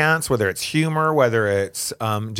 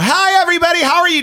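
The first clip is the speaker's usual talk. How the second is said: very high, loud, from the very top of the range; 7 dB louder than usual. Asked whether they change their voice, a speaker shows a high-pitched greeting. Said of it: "I start high".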